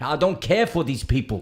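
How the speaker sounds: thick, loud, heavy put-on Austrian accent. Imitating the speaker's ninety-two-year-old father, in a heavy Austrian accent. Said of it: "I'm putting on his heavy ac- um, Austrian accent".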